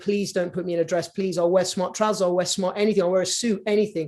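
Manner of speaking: ordinary talk, nothing marked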